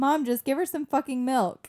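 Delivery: put-on high, loud, bossy child's voice.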